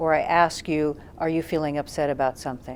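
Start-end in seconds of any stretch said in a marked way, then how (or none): 1.2-2.8 pitch falls on the word "something". Asking someone a question with curiosity, ending with falling pitch on 'something'. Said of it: "if we come down at the end".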